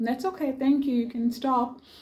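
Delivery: mock, high, sugary-sweet nicest voice. Retelling asking someone to stop, in a put-on sweetest voice. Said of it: "In my sweetest voice".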